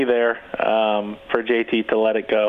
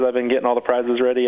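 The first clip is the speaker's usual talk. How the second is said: ordinary delivery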